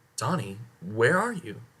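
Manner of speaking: ordinary delivery, nothing marked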